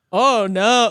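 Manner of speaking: heavy sarcastic tone on the words. Showing how sarcasm sounds, more emotive: demonstrating sarcasm. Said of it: "isn't sarcasm like".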